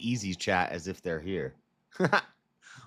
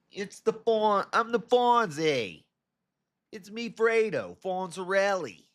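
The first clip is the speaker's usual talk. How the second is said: very high Australian accent; 11 semitones higher than usual. Introducing a made-up rival, Italian attempt that sounds Australian. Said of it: "Why am I sounding Australian?".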